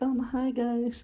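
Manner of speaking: very high-pitched anime character voice. Imagining a forgotten quiet-voiced person as Hinata: quiet Hinata voice. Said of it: "Hinata from Naruto".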